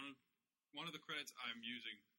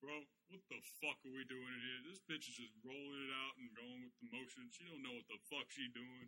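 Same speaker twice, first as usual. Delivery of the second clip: put-on griping, complaining voice.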